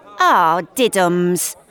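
loud, scornful, unsympathetic jibing tone. Kat answers a man who says he has no life now, unsympathetic. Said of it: "says Kat unsympathetically".

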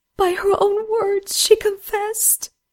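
occasional sob in voice. Narrator reading the maiden's reply to Rupert, occasional sob in her voice. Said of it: "The maiden had cried herself out of tears, though she still had the occasional sob in her voice".

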